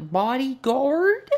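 hammy, overacted line reading. Mocking an actor's overdone delivery of one word: imitating an overdone line reading. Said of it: "she's hamming it up".

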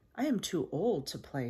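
ordinary delivery, nothing marked

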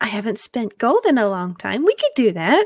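scatterbrained, airheaded, ditzy voice. Playing March in a role-playing game, answering a request for help, airheaded butterfly bard voice. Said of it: "So what's an airheaded barderfly to do?".

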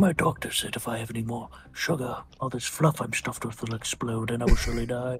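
very soft, low cartoon bear voice. Asked for a Pooh impression, do a Winnie the Pooh impression. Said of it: "[name] can give you a Pooh the Bear impression".

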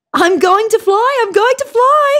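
very high, loud, thrilled squeal. Emu, placed on a rise above Eagle Ridge by Earl Grey, speaks excited. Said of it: "said Emu excitedly".

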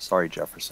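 muttered under breath. In a role-play game, a player's character mutters under breath before shooting the door. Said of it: "I'm going to mutter under my breath".

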